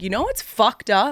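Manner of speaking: emphatic, forceful, punchy delivery. Showing how the speaker gets to say the line, with oomph. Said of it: "I get to say it with oomph".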